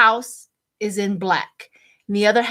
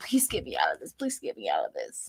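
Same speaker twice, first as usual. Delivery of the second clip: mock desperate pleading with swooping pitch; 10 dB quieter than usual. Retelling someone's foxhole prayer: imitating a foxhole prayer. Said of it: "a foxhole prayer".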